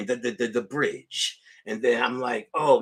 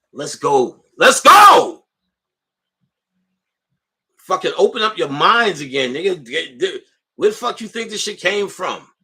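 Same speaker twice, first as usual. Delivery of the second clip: fired-up, loud yell, swooping and rising; 7 semitones higher, 9 dB louder than usual. Ranting at an invisible listener, yelling. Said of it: "I don't know who I'm yelling at".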